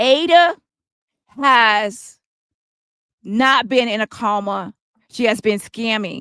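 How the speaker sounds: slow, deliberate, drawn-out, spelled-out word-by-word delivery. Addressing viewers directly and repeating a claim about ada, speaking slowly. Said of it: "speak a little slower".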